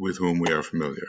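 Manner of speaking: quick, fast-paced delivery.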